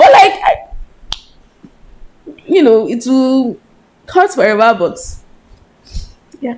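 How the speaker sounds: crying through the words. Talking about a father who died, crying while talking. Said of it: "Why am I crying?".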